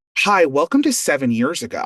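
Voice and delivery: ordinary delivery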